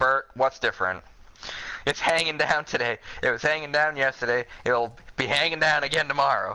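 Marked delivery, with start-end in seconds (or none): none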